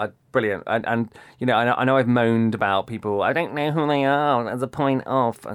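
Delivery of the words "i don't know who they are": whiny, complaining voice. Imitating own past complaints about unknown guests: mock whiny self-impression. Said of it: "that's me doing an impression of myself".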